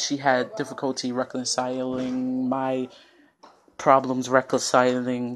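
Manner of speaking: ordinary delivery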